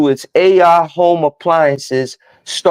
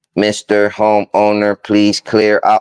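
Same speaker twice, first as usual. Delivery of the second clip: very deep, flat monotone robot voice; 8 semitones lower than usual. Speaker imagines an AI robot addressing a homeowner, in a robot voice. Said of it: "in the robot voice".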